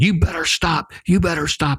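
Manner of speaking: high, frantic, screaming holler. Retelling running after the car as she drove off: retelling own hollering. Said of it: "I just hollering".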